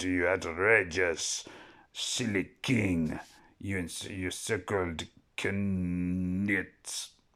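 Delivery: put-on French accent. Describing a French character, the speaker slips into it; Monty Python French accent. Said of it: "She speaks with the beautiful French accent".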